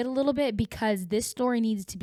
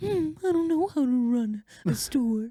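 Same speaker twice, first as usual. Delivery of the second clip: put-on cartoon bear character voice; 4 semitones higher than usual. Describing a YouTube parody, the speaker does a Winnie the Pooh voice. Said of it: "He's like".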